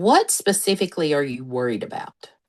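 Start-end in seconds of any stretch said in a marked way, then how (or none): none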